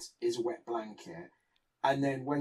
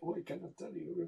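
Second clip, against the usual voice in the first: soft, lightly done put-on mid-European accent; 5 semitones higher, 9 dB quieter than usual. Paraphrasing a character from the book, in a mid-european accent. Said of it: "that was my mid-European accent".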